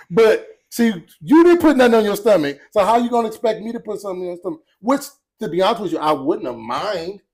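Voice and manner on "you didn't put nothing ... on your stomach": high, loud, nagging scolding voice. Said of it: "why she gotta say it like that".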